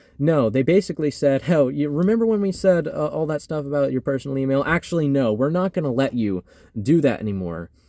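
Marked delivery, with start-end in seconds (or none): none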